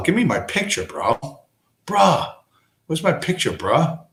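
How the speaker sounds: exasperated, fed-up, annoyed, frustrated tone. The speaker's picture won't come up, annoyed. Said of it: "that's making me angry".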